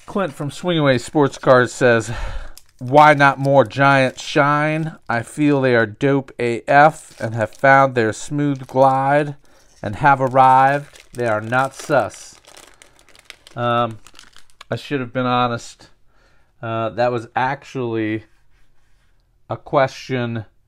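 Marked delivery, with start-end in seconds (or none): 2.8-12.3 loud, slow, goofy funny voice. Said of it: "make [name] talk in a funny voice".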